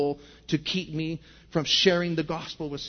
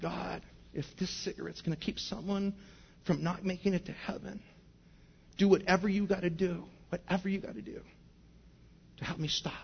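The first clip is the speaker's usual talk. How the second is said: mock tearful, soft, slow bawling; 8 dB quieter than usual. Retelling driving home that night, addressing god, retelling bawling. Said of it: "I remember just bawling".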